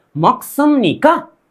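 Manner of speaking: मकसुमनिका said with a rising tone. Lesson on forming questions, tone follows the question: rising question tone on मकसुमनिका. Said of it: "question कर रहे हैं, तो आपके टोन भी उसी के हिसाब से ढलना चाहिए।".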